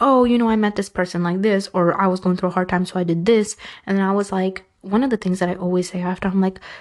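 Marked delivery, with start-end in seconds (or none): none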